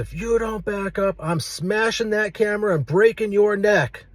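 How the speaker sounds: threatening holler, pitched way up. Retelling the man's threat to smash the camera: imitating a man yelling a threat. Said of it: "he's yelling at me and says".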